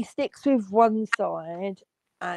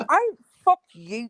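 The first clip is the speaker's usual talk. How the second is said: high, threatening mock Newry accent. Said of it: "They want me to do a Newry accent".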